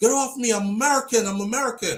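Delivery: mock straining man's scream. Retelling a man being pushed into a car: imitating a man screaming. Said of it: "he's screaming out the whole time".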